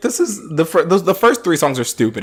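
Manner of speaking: ordinary talk, nothing marked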